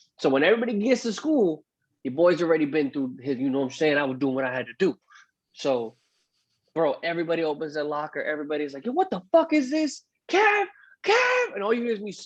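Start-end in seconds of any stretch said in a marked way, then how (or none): 8.9-11.6 mock very high, stretched-out, drawn-out yell. Retelling classmates opening lockers full of garbage: imitating classmates screaming. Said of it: "you hear whoever the fuck is screaming".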